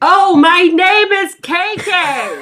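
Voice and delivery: put-on loud shout. Retelling talking to a guy with a hearing problem: imitating own loud shout. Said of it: "But really loud and right in his face".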